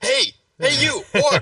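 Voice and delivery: put-on knight shouting. Imagining a knight in combat calling out an orc: imitating a knight shouting. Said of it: "some knight just being like".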